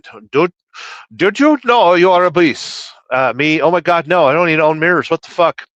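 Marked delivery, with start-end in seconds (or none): 0.3-2.9 put-on doctor voice in an Indian accent. Doing a viewer's chat request, doctor in an Indian accent. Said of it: "doctor in Indian accent".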